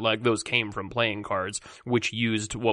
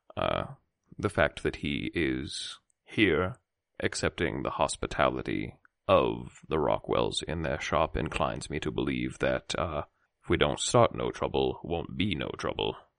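quiet, soft, very low-pitched understated delivery; 8 semitones lower than usual. Voicing a character turning to Tess in a shop, speaking softly. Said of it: "but just sort of say softly".

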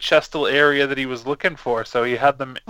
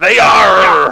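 very loud, pitched-up swashbuckling pirate voice; 6 semitones higher, 11 dB louder than usual. Repeating their own earlier reply after noticing how it came out: pirate voice. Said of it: "I just sounded like a pirate".

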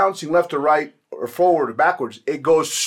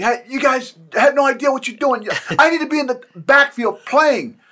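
high-pitched, all-out screaming; 9 semitones higher than usual. A player recalls screaming at the coaching staff to let him play, retelling own screaming. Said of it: "I was screaming".

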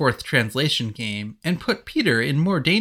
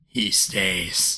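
very deep, very low, rumbling growl; 7 semitones lower, 4 dB quieter than usual. Narrating a story, a man holds up a hand to stop another man; growling. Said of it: "Anthony growled".

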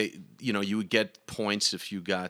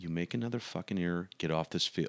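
hushed, threatening half-whisper, very close and intimate; 2 semitones lower, 5 dB quieter than usual. Retelling what a dad half-whispered in his ear after an error: imitating dad's half-whisper. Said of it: "he whispers in my ear".

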